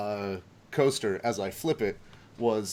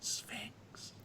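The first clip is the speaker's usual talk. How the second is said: leaning-in, very quiet, barely audible whisper; 12 semitones higher, 17 dB quieter than usual. Explaining a coaster game, leaning in to whisper the word. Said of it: "lean in and whisper".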